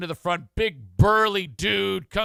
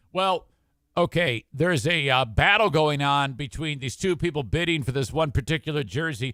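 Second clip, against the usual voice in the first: normal talking voice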